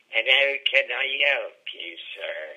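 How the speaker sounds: put-on sly, cunning West Country accent. Acting out your own reply to a chap who took notice of the likeness, cunning West Country accent. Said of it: "replied in sort of that cunning West Country way".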